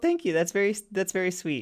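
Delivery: teary, choked up, high-pitched voice. Thanking another speaker for kind words, close to tears. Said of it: "don't cry".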